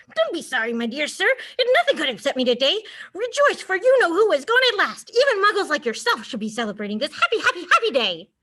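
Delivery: put-on high, squeaking old man's voice. An old man knocked to the ground answers the man who knocked him, squeaky voice. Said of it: "he squeaked a voice that made passersby stare".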